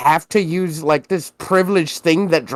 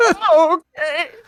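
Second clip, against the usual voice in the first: very high-pitched fake weeping and sobbing; 12 semitones higher than usual. Acting out a stunned first-class passenger offered free sodas: mock crying. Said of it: "Just start crying".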